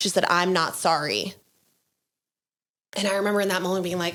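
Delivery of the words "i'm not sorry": mock grave, dead serious, unwavering voice. Retelling what mom said on the phone: imitating mom's serious, stable voice. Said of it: "in the most serious, uh, and, and stable voice".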